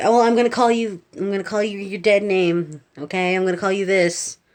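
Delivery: acted angry rant. Retelling what a rude teacher said about using a dead name: imitating someone getting mad. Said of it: "getting really mad".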